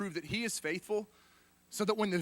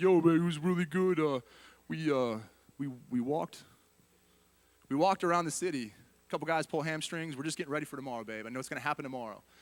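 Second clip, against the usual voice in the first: prizefighter-style talk; 3 semitones lower than usual. Imagining the guy reporting back from battle, in his best Rocky voice. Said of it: "like in his best Rocky voice".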